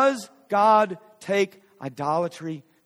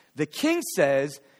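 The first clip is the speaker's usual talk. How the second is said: normal talking voice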